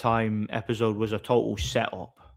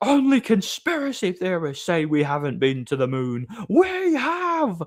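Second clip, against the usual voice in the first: high, slow, swooping, scolding shout; 8 semitones higher than usual. Retelling how a teacher shouted back at them: imitating Mister Reed shouting. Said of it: "That was him shouting at me".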